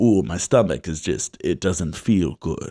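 low put-on agent voice.

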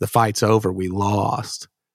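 plain

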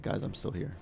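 hushed, breathy whispered aside. Speaking in character while invisible, telling the others he's still there: whispering. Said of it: "I whisper".

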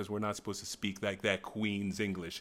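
ordinary delivery

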